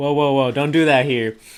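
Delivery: put-on teenage voice. Retelling a fight while ordering food, the speaker imitates a teenage worker. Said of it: "He was all like".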